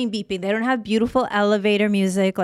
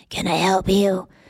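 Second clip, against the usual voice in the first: put-on thick, heavy smoker's voice. Retell how a masked woman came out to help you before your police report, imitating a woman's smoker voice. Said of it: "She has a super kind of smoker voice".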